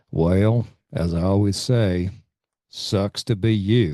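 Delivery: put-on strong, deep American South accent. Retelling what a guy in the group said to a grieving friend, deep Southern accent. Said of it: "in his deep Southern accent".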